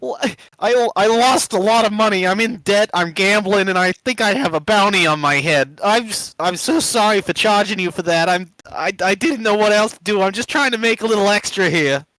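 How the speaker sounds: high, loud blubbering through tears.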